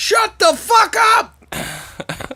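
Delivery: mock exasperated outburst, very high, dragged out. Retelling yelling at the TV during a movie scene: imitating own yelling. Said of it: "yelling at the T V".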